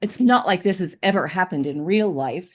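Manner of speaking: very sarcastic, heavy sarcasm. Explaining open meetings law violations: very sarcastic. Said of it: "speaking very sarcastically".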